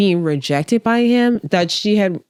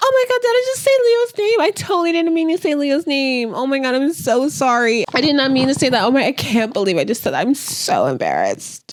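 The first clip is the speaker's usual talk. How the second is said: fake embarrassment, high and swooping; 8 semitones higher than usual. Retelling a contestant saying a name by mistake: imitating fake embarrassment. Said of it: "how embarrassed she is and how bad she feels".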